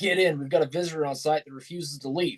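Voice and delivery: ordinary delivery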